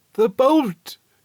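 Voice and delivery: very high, panting, strained cry. Narrator reading the old woman's cry to her husband: strained, panting cry. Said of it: "strained and panting".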